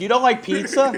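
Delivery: high, sneering, mocking ditzy-girl voice. Complaining about how girls react to him, imitating the girls mockingly. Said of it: "all these like fucking idiot girls will be like".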